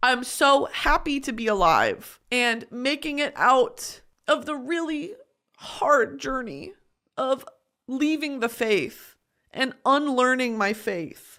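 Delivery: voice close to breaking into crying, tearful. Talking about their life, the speaker says they're going to cry: about to cry. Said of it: "I'm going to cry".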